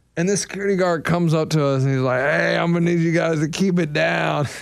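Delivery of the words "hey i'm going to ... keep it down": put-on drunk voice, lower. Retelling what a security guard told rowdy teens: imitating a drunk-sounding guard. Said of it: "he sounded drunk".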